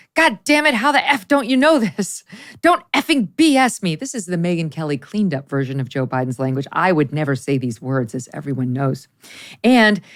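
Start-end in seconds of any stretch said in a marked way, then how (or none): 0.1-3.9 sudden angry voice. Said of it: "The president's admonitions include".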